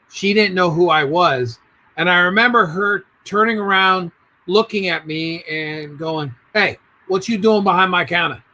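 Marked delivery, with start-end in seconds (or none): 6.6-8.4 fast, put-on New York accent. Retelling how a woman challenged him behind her counter, imitating a New York accent. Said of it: "however in New Yorkish".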